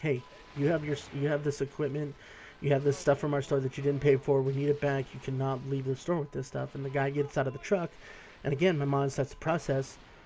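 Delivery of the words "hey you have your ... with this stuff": plain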